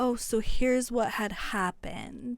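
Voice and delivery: put-on sweet, polished, nicey-nice professional politeness. Describing rude customers who switch when a manager comes up, mock-sweet nicey-nice customer. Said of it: "talking all, nicey nice and like really professionally".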